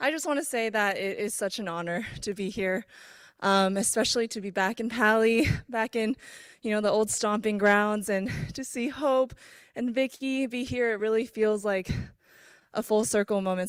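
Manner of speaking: breathless, winded, short on air. Returning guest greeting everyone right after playing, out of breath. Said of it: "I'm like so out of breath".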